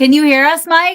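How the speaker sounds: very loud calling out. On a call, the speaker yells to check whether mike can hear them. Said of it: "I'm yelling".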